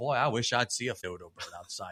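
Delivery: put-on earnest tone, full of sarcasm. Quoting own morning thoughts about seeing a dodo bird: sarcastic put-on tone. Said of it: "I'm just being sarcastic".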